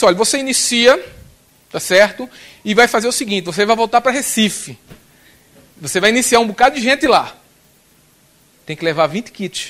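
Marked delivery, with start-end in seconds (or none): none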